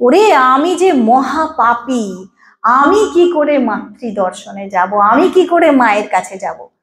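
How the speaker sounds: plain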